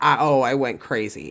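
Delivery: ordinary talk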